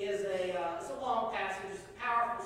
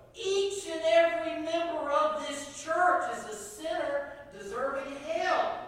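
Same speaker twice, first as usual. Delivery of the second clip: loud, high, booming preacher's sermon bellow; 8 semitones higher, 6 dB louder than usual. Storyteller voicing a preacher addressing the church, retelling a preacher's bellow. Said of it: "he cranked up his volume a little bit, and he bellowed".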